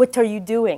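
put-on Israeli accent. Lior comes up behind someone at their computer and questions them, in Lior's crazy Israeli accent. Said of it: "Lior has a crazy Israeli accent".

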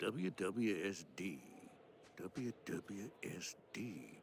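mumbling under breath. Stranded in the middle of nowhere, a character mutters a motto for guidance, muttering. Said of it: "What are you muttering?".

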